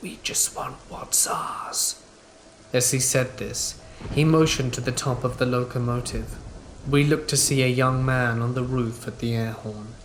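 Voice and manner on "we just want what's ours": whispered, rasping demonic voice. Retelling what the lead trespasser answered, in a demonic gravelly voice. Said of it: "in a demonic gravelly voice".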